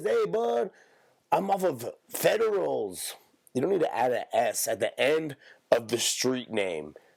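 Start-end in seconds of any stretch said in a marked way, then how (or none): 0.0-3.1 put-on Mexican accent, very high-pitched, slow, drawn out. Mexican speaker showing how Mexicans talk, Mexican accent impression. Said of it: "They say they talk like this".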